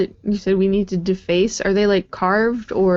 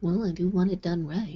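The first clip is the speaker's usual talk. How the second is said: mumbled quietly, quieter; 3 semitones lower, 10 dB quieter than usual. Replying in character to a party member: muttered under breath. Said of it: "That was, like, under her breath".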